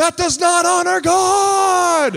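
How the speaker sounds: very high-pitched, very loud, shrill, scolding shout. A father retells his son pointing at somebody, imitating Elijah yelling. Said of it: "he's yelling at them".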